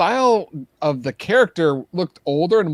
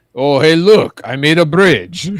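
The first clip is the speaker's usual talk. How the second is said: louder, put-on French accent; 5 dB louder than usual. Reading out a message someone sent, redoing it in a French accent. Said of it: "it's more of a French".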